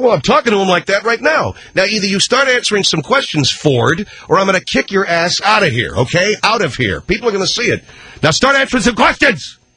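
high-pitched angry talk-show host yelling.

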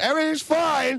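put-on scream. Retelling a phone call with her, retelling a scream into the phone. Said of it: "she's screaming into the phone".

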